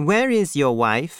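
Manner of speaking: plain reading voice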